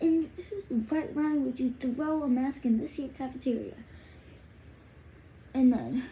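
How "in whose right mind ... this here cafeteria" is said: put-on angry, fast scolding yell. Retelling how a woman came into the cafeteria and yelled at them, retelling a yell. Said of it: "yells at us".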